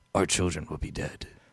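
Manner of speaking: gruff, whispered, hard-boiled private-eye voice. Speaker performs a line that others recognize: Rorschach voice. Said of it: "Why are you doing Rorschach?".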